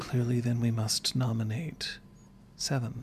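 very quiet. Voicing a character's line to the group, very quiet. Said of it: "Lenore very quietly just says".

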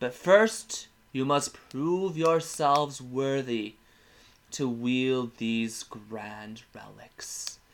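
ethereal, otherworldly spirit voice. Game master voices an ethereal being giving a speech to the champions. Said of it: "It's a almost ethereal being".

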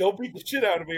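mock giggly drunk. Retelling a drunk guy holding the door for them, imitating a giggly drunk guy. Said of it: "he got all weird and like giggly".

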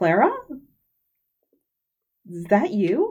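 astonished, surprised tone with pitch rising up. Voicing a teacher who finds a student on the field: surprised. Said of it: "she has this very surprised look on her face, and she says".

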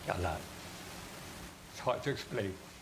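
holding back tears. Asked what's going through their head, with a proud dad there, holding back tears. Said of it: "I'm trying to hold back the tears here".

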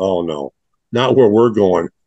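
ordinary talk, nothing marked

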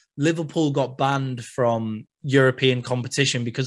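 plain

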